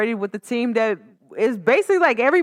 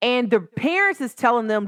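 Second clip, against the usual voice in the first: ordinary delivery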